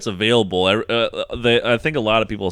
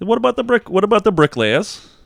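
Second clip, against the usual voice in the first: very high, squeezed, pressing voice with one stumble and restart; 11 semitones higher than usual. Joking about a commentator's favourite example, Jordan Peterson impression. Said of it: "Or however he fucking talks".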